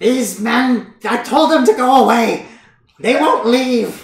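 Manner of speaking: very high, loud nagging voice. Voicing Morgantha, tugging at Albrecht's clothing on the stairs, Morgantha nagging. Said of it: "[name] begins following after you guys, and she's like, / She's kind of like nagging at you for like invading her house as you two continue up the stairs".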